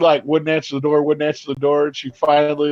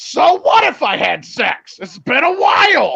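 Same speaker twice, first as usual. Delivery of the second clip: mock top-of-the-lungs scream, very high, swooping pitch; 12 semitones higher, 4 dB louder than usual. Retelling a neighbor screaming at the door: imitating a scream. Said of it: "screamed at the top of her lungs".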